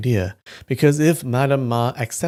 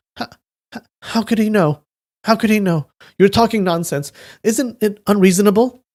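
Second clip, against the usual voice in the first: trembling, faltering, high, quavering stammer; 8 semitones higher, 4 dB louder than usual. Narrator reading a character's reply in a novel, in a quavering voice. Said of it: "said in a quavering voice".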